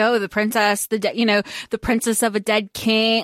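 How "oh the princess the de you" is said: plain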